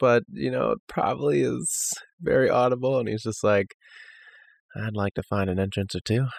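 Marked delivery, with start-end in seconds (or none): 4.8-6.3 muttered under his breath. Voicing his character in a scene, muttered under his breath. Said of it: "kind of under his breath".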